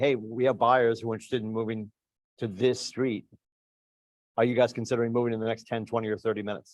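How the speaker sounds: bone-dry, flat, matter-of-fact deadpan delivery. Recalling door knocking, the speaker re-enacts what he said to homeowners: retelling a deadpan delivery. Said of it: "I'd say deadpan".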